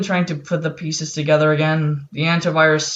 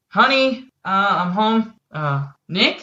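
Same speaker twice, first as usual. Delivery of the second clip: put-on, higher-pitched woman's voice; 5 semitones higher than usual. Narrating a scene, voicing a woman who comes home, in a woman's voice. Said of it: "you hear a woman's voice saying".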